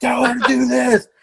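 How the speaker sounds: high-pitched put-on scream. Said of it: "I start screaming into his ear".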